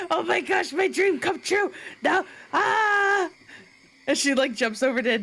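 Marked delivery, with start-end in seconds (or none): 0.1-3.3 high, weepy, joyful crying, "ah" drawn out. Voicing a goblin whose dream came true, crying with joy. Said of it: "she's, like, like, crying".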